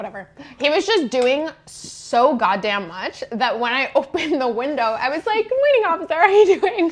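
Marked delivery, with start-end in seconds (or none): 5.5-6.9 put-on sugary politeness, high and quick. Retelling greeting a police officer at the car window, retelling a big-smile greeting. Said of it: "With like the biggest smile on my face".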